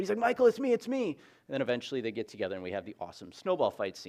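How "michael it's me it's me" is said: very high, loud, repeated calling out. Retelling a movie scene of calling out to a half-brother, Buddy the Elf yelling. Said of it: "Buddy kept yelling and yelling and yelling".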